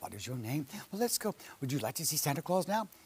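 calm, soothing voice. Retelling how you spoke to a worried mother's boy before santa, retelling a calming voice. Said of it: "You give him that calming voice".

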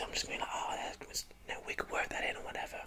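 hushed whisper. Explaining being flexible about a vision, whispering. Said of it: "I'm whispering a lot".

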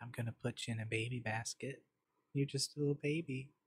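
very quiet, joking, close-mic asmr half-whisper. Testing new mics, a speaker tries out ASMR, mock ASMR half-whisper. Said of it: "So I'm trying out my ASMR".

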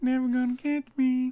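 very high, shrill yelling. Quoting a cartoon during a game, yelling greased up deaf guy impression. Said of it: "Why is this person yelling?".

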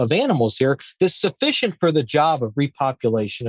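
normal talking voice

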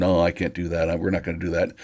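usual speaking voice

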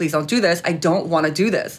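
ordinary talk, nothing marked

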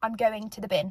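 sassy, play-acted delivery. Retelling a reply to a restaurant worker: retelling a sassy reply. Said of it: "I said it with a bit of sass".

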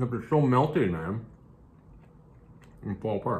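speaking with mouth full of food. Eating and chatting about how good the food is, talking with mouth full. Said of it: "I'm talking with my mouth full".

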